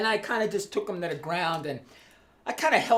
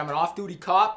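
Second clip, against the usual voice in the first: ordinary delivery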